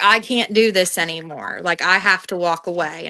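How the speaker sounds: put-on tearful crying voice. Recounting a phone call, the speaker quotes her friend: retelling a friend crying. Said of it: "She's crying".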